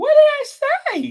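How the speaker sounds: very high, innocent, butter-wouldn't-melt sweet voice. Asking a question after someone reacts: very innocent voice. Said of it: "in that very innocent voice".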